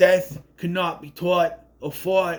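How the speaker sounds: put-on New York accent. Quoting an actor's line from the movie, imitating Chad Donella's New York accent. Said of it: "he's really get that New York accent".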